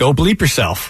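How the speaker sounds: ordinary talk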